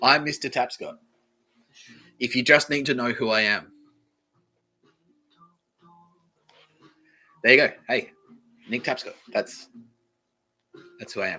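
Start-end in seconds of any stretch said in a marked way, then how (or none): 2.2-11.4 snide, needling, pointed passive-aggressive delivery. Introducing the podcast in a passive aggressive way. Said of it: "that was me being passive aggressive".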